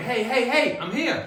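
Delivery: put-on, very high, drawn-out, loud shout. Retelling nearly being reversed into by a truck: imitating own shout.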